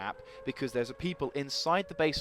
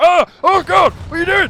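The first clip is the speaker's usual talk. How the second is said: mock, shrill, very high, very loud frantic panic; 20 dB louder than usual. Commentating on a game, acting out the player who is panicking: imitating a panicking player. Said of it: "He's panicking now. He's like".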